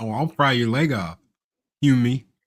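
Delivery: put-on talking-dog voice. Acting out a dog threatening someone: imitating a talking dog. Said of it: "and he's like".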